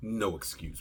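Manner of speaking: ordinary talk, nothing marked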